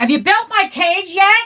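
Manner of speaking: shouting. Calling out to someone in another room: yelling. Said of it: "sorry for yelling".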